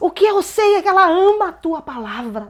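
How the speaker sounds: high, loud shouting. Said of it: "ela gritava".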